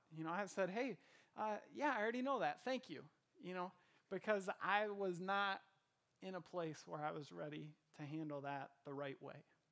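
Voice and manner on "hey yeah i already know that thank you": dry, snarky, sarcastic delivery. Retelling own past reply to someone: retelling own sarcastic reply. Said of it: "I went the sarcastic route".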